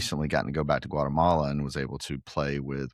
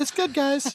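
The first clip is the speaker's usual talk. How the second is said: much higher voice, faking being fine, dismissive. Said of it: "Your voice is a different octave".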